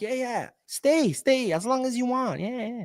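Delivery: high, slow, syrupy mock host voice.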